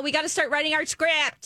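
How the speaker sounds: put-on urgent scream. Retelling what Julia said while hugging: imitating Julia screaming. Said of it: "she was kinda screaming in her ear".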